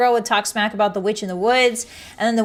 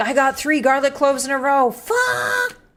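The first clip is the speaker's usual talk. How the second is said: exasperated, furious outburst, kept small; 3 semitones higher than usual. Imagining making potion-brewing asmr while failing at it: pretend screaming. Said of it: "I'd just be screaming".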